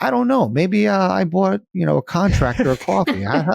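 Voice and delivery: high, fast, innocent playing-dumb tone. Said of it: "I'm like".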